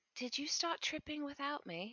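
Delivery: high, hushed half-whisper. Playing a character who leans over to a friend: half-whispering in her ear. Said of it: "whisper in her ear".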